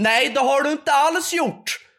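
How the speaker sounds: very high, loud, drawn-out, accusing shout. Retelling a woman shouting at the speaker walking out after paying, retelling a shout. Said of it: "skriker hon bara".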